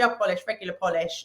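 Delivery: plain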